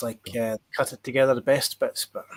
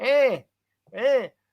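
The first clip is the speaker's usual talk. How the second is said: put-on Glaswegian accent, higher; 11 semitones higher than usual. Answering a request to do a Glasgow accent: put-on Glasgow accent. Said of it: "I'll do my Gla-".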